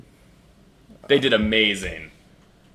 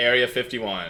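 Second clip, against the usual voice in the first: ordinary delivery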